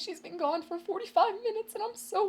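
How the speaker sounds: very high voice, cracking, near tears. Retelling what a man with a walker told the police at the door, imitating his cracking voice. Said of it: "his little voice cracked up".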